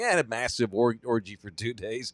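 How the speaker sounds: casual, unbothered, matter-of-fact, offhand delivery. Retelling how someone described an orgy: imitating a nonchalant delivery. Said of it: "the same nonchalant delivery as anything".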